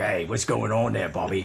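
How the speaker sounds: low, growly British accent. Describing a character's voice, the speaker demonstrates it: Peaky Blinders-like British accent. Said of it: "British Isle accent. It's like".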